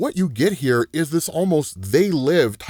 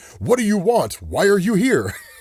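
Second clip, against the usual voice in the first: high-pitched, panicked outburst, panicky cry; 5 semitones higher than usual. Retelling how a character screamed at a baby: imitating someone screaming. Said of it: "he starts screaming at it".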